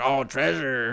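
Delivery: swashbuckling cartoon pirate voice. Retelling a cartoon joke where SpongeBob hands over soap: SpongeBob pirate voice. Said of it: "he's acting like a pirate".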